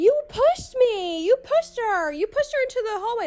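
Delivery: very high, half-yelled, accusing tone. Retelling a friend accusing the speaker of pushing: imitating someone yelling. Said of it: "they're both kinda yelling at me now".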